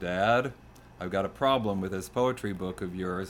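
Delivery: ordinary delivery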